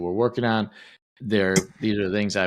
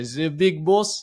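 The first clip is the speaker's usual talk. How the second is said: acted Russian accent, higher pitch; 7 semitones higher than usual. Showing how he and his teammates always say Big Boss, Russian accent. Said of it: "all go to this Russian accent".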